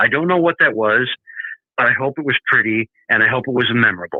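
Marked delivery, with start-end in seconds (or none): none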